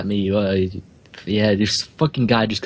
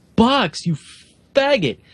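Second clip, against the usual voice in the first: play-acted loud, high taunting scream. Telling a story about spotting a guy on the street, retelling a loud scream. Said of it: "I scream out really loudly".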